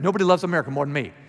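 ordinary delivery

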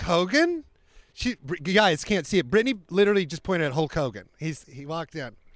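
plain

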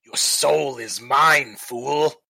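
jeering, mocking, taunting villain voice. Game master voicing the necromancer after a player's missed swing, mocking necromancer voice. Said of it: "And he lets out another mocking laugh".

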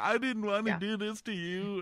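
forced tearful crying voice. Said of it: "he's trying to cry".

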